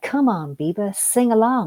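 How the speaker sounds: sarcastic, slow, teasing sing-song. Retelling a remark made to the speaker during church music, mock-sarcastic teasing. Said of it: "he was being sarcastic".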